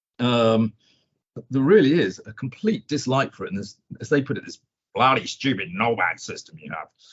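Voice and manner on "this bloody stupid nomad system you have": put-on low, clumsy, botched, terrible American accent. Quoting what others said about a stock exchange system: terrible American accent. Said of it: "that was probably a terrible American accent".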